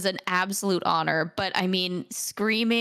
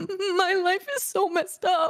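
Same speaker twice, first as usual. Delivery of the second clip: acted crying through words, very high, slow wail; 11 semitones higher than usual. Retelling own line delivered while crying: imitating crying while talking. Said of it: "and I'm literally crying".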